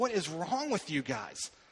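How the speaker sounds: put-on cutting, biting, sarcastic tone, swooping pitch. Retelling a letter's rebuke to a church: imitating a sarcastic, biting rebuke. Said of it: "He is sarcastic. He is biting".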